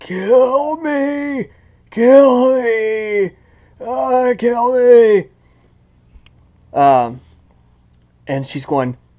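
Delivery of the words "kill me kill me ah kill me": agonized screaming cries, higher and louder. Voicing a tortured figure whose lungs are compressed: pained screaming voice. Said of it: "the sound that comes out of the voice is".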